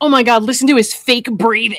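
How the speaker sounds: put-on mocking voice. Retelling how people mocked a testimony: imitating people mocking. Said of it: "they took it and they're mocking it".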